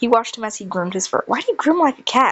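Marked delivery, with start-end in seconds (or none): 1.3-2.3 entertained, lightly amused, pitched up. Watching Sun groom his fur, he asks, amused. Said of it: "He asked amused".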